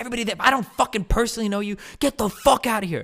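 screaming, very high-pitched ranting. Retelling a party where someone screamed at guests to leave: imitating Cutie screaming. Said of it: "she starts screaming. She's like".

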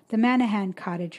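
ordinary delivery, nothing marked

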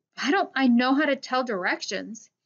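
disgusted. A man asks himself a question, in disgust. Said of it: "he asked himself in disgust".

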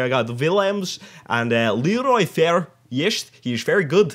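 slight put-on Dutch accent. Listing team players' names with a slight put-on dutch accent. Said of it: "I'm trying to put a bit of a Dutch accent on here".

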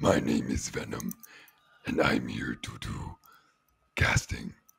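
rough, raspy, creaky character voice. Introducing oneself at the start of the episode: Venom voice. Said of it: "that sounds so much like him".

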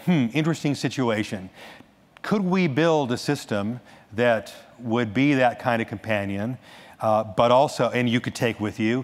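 ordinary delivery

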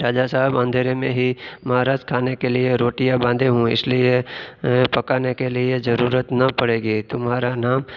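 usual speaking voice

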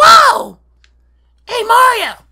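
heavy rasp in the voice. Explaining to friends how the character sounds, doing the Toad voice. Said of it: "he sounds like".

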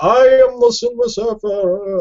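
very high, slow, grandiose heroic declaiming with swooping pitch. Speaker mocking on-the-nose Stan Lee comic dialogue: Silver Surfer voice. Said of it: "like that kind of voice".

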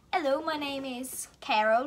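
clumsy, bad fake British accent. Answering a would-you-rather question about accents, in a bad British accent. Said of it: "I'm so bad at British".

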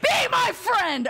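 mock shrill, loud yell, pitched way up. Mimicking a shout at a moose that refuses friendship, with a loud yell. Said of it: "Sorry for yelling, I was- I was trying to mimic the shout".

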